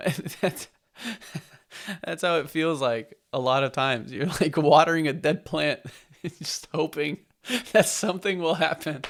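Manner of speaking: talking through laughter. Explaining how something often feels, laughing while talking. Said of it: "I'm laughing so I don't cry".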